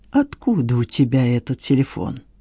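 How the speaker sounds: barely audible, low, hissed half-whisper. A fake migrant worker grabs the man's wrist and questions him, hissed barely audibly. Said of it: "прошипел едва слышно".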